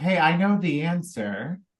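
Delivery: ordinary delivery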